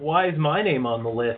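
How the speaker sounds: plain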